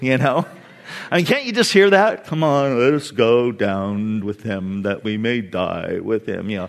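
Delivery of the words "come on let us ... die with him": bad donkey voice, very low, deep, slow, soft. A speaker voices the disciple Thomas's words, horrible Eeyore impersonation. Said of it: "that was a horrible Eeyore impersonation".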